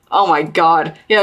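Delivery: ordinary delivery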